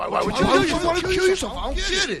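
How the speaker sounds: high, loud, mocking impression.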